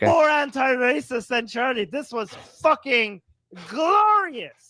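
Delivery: high, fired-up, worked-up yelling. Praising a video excitedly while another speaker objects: yelling. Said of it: "Stop yelling".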